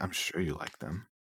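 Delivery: muttered under breath. In a roleplay game, replying to talk of donuts, said under the breath. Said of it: "I say under my breath".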